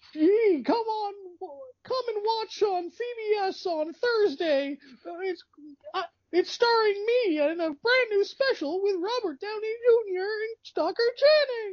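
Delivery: very high, rough, poor cartoon frog voice. Imitating an announcer's commercial done as Kermit: worst Kermit the Frog impression. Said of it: "it's the worst Kermit you've ever heard".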